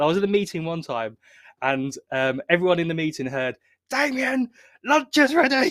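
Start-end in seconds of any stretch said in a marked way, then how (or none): 3.9-5.7 little, screechy, very high calling shout. Speaker imitates his mum calling him, heard by everyone in a meeting, with a screechy shout. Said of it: "she has this little screechy voice".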